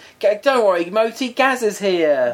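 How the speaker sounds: put-on very high-pitched, slow Cockney accent. Quoting what Gazza said to his friend: imitating Gazza in a Cockney accent. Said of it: "Gazza is not a Cockney".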